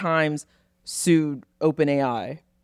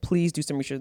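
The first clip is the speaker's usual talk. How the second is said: pleading, begging tone, quieter; 4 dB quieter than usual. Retelling how a girlfriend emailed a doctor: imitating someone begging. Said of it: "begging this doctor".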